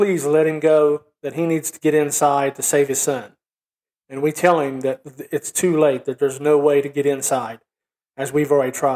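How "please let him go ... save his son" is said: normal talking voice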